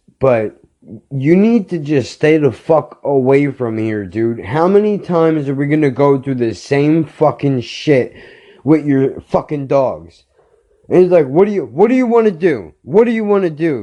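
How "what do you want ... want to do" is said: put-on, high, repeated screaming. Retelling a man's reply during an argument over his dogs: imitating someone screaming. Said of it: "Now he's screaming at me".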